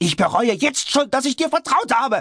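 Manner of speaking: very high, bitter, shrill, hysterical shriek. Narrator reads George's line to Heinrich: George shrieking hysterically. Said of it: "[name], nachrangiges Mitglied der englischen Königsfamilie, von seinem Vater allerdings anerkannter Bastard".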